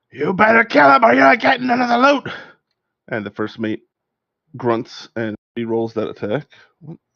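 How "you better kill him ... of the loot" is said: very high, shrill pirate captain shout. Voicing the captain, who yells at the first mate: captain shouting. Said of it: "the captain, uh, shouts out".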